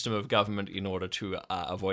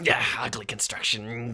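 crowd hissing in a disapproving jeer. Narrating a game scene, the storyteller voices a crowd: hissing crowd. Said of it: "The crowd hisses and goes".

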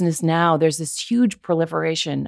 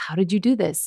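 normal talking voice

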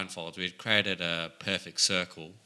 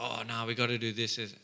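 usual speaking voice

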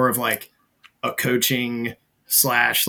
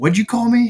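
mock very high, loud, pissed-off, indignant tone; 10 semitones higher, 5 dB louder than usual. Retelling an officer's reply after being called Major: imitating an angry officer. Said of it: "he was pissed".

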